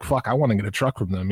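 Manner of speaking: normal talking voice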